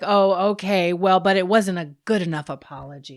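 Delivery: mock tone dripping with dismissal and disdain. Retelling how Veronica reacted to the apology: imitating a dismissive, disdainful tone. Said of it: "just dripping with dismissal".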